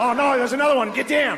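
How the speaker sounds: yelled high in an Australian accent.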